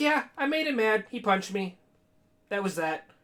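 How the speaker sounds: casual, offhand, matter-of-fact, nonchalant tone. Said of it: "she just so nonchalantly".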